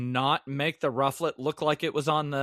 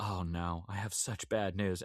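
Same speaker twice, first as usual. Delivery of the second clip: deeply sympathetic, caring, commiserating tone; 8 semitones lower, 11 dB quieter than usual. Retelling how Professor Zed broke bad news: empathetic Professor Zed voice. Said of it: "'cause he's sounding so empathetic".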